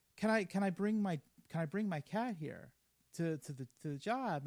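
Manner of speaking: ordinary talk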